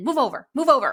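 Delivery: urgent, loud delivery. The speaker recalls a voice heard on the way back to the house, loud voice. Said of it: "like in a loud voice".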